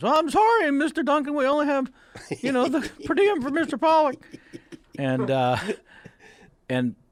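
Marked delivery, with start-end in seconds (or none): 0.0-4.2 very high, loud, flustered blurting. Retelling a production assistant's nervous reply: pimply-faced kid from The Simpsons voice. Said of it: "like the pimply-faced kid on The Simpsons".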